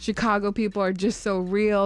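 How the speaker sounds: ordinary talk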